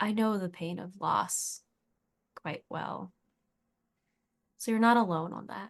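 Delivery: close, soft, hushed half-whisper. Playing Tawny, scooting closer to share something vulnerable, half-whispering. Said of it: "she's just going to whisper".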